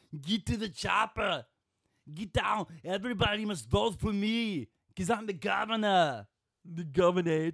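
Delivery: loud, high bellowing. Asked to show which voices you can do, launch into an Arnold Schwarzenegger impression.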